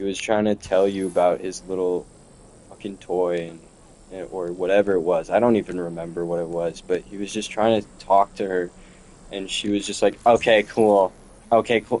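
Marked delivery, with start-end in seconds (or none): 10.2-12.0 bored, dismissive, couldn't-care-less tone. Retelling how she answered her little brother: imitating a dismissive tone. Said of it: "Like, in that tone, exactly".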